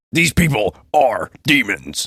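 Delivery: loud, booming, very slow delivery. Attempting the voice despite a head cold, Alex Jones voice. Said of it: "like quote Alex Jones, if I can do the voice with this cold".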